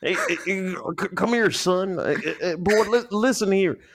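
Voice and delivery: put-on old man voice, pitched way up. Imitating how old people call someone over: Foghorn Leghorn voice. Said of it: "like Foghorn Leghorn did back in the day".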